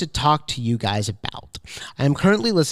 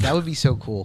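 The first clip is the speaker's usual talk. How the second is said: plain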